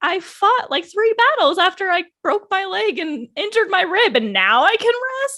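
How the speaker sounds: play-acted dripping sarcasm, very high and swooping. Retelling the episode's reply to the crow: imitating Tanjiro being sarcastic. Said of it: "Tanjiro even was sarcastic".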